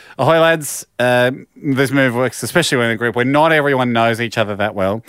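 ordinary talk, nothing marked

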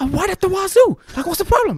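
pitched-way-up shrill dub voice. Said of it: "you have to do a Chucky dub".

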